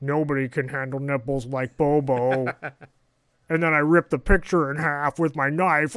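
sinister character voice. Recapping a scene, the speaker quotes Bobo in a flat, modulator-like voice. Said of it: "[name]. / it sounds like one of those voice modulators because he's trying not to pitch up or down. / He's trying to just sort of stay level and then break up his speech pattern, / It gets more sinist".

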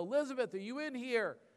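very high-pitched, panicked, frantic calling out. Retelling searching the house for someone missing, retelling a yell into the house. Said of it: "and I yell".

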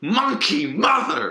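mock half-hearted, heated, upset yell. A podcast host recalling a co-host's outburst on a past episode, retelling an upset yell. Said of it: "Bo was upset and he yelled".

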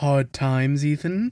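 patronizing, superior, condescending tone. A player imitates a game character when selling him items: mock-condescending Duke impression. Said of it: "condescendingly being like".

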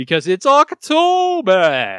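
terrible vampire count accent, loud, swooping, "October" drawn out. Podcast host announcing spooky october season, in a terrible count accent. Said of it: "this is my terrible count accent".

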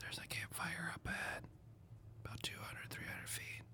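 very quiet, barely voiced in-character whisper. Warning teammates about a distant campfire in character: whispering in character. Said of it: "and just whisper".

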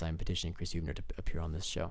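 deep, low put-on voice. Petitioning a guest to appear on the show, in a low deep voice. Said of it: "In my low voice".

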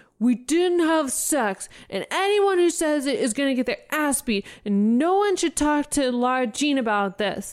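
mock shouting. Retelling what a guy yelled down the hallway in front of everyone, retelling a yell. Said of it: "turns around and yells down the hallway".

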